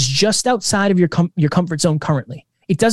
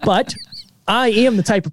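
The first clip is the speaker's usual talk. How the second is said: normal talking voice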